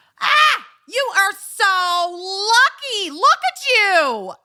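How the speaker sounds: very high screech, stretched out and drawn out. Retelling what a lady walking past the house shouted, retelling a lady's scream. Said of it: "Literally screamed at me".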